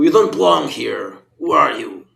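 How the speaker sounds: hostile, rough, angry shout. Voicing a mutant who confronts strangers: shouting at the intruders. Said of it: "He shouts at you".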